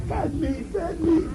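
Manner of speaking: high, soft, excited preacher-style call.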